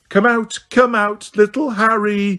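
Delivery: taunting, high-pitched put-on baby voice. Calling out to harry, who hides behind the statues, in a mock baby voice. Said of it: "she called in her mock baby voice".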